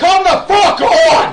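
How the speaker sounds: high, loud, furious yelling.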